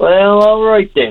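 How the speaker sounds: very high-pitched Southern Shore twang. Retelling what a woman said when asked to play, imitating her Southern Shore twang. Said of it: "in her Southern Shore twang".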